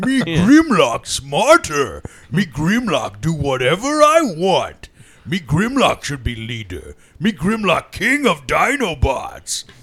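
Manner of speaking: put-on dim robot dinosaur voice. Imitating Grimlock boasting he should be leader: Grimlock voice. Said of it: "Grimlock and the Dinobots are always like".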